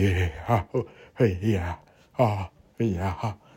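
put-on nervous country voice. Describing a bad actor in a scene, the speaker imitates a nervous country guy.

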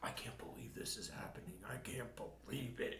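low, soft, whispered disbelief. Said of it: "he's like".

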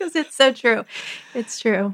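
laughing and weeping at once through the words. Agreeing with the other speaker about being crowded at home, laugh-crying while talking. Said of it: "I'm laughing, but I'm crying, laugh crying".

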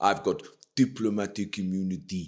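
arrogant, low, put-on South African accent. Retelling a film scene, quoting the arrogant South African ambassador: South African accent. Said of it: "the South African goes".

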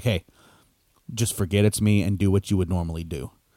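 whispered aside. Retelling what the wrestling opponent whispered after winking, retelling a whisper. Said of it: "winked at him and whispered".

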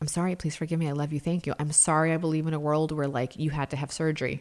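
mock muttering under breath. Retelling words said to a patient's pain, imitating muttering under breath. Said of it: "under my breath".

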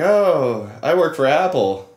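slow, bragging, nerdy tone. Retelling a customer bragging about his employer: imitating Gilbert. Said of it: "And Gilbert would be like".

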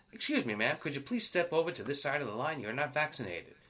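acted, extremely polite, courteous army officer voice. Retelling a soldier asking an unvaccinated woman to step aside: imitating a very polite soldier. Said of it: "in a very, very polite way on the army side".

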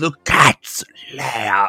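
quiet soft hushed whisper. Retelling what a character said to David: imitating a whisper. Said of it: "he kinda whispered at David".

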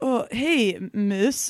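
creepy, weird, off-putting voice. Retelling a stranger approaching in a store: imitating a creepy guy. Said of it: "weird guy, like, he's like".

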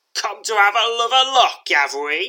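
very loud, very high, sneering taunt. Narrating a scene, voicing a scowling man who advances with a knife: sneering. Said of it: "he sneers".

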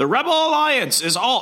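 voice cracking up high. A show host tries the Clone Wars narrator voice for the intro, voice cracking. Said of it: "I just hit puberty again".

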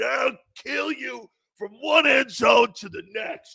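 mock drunk voice. Retelling a veteran's threat: imitating a drunk man's threat. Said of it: "he's all hammered".

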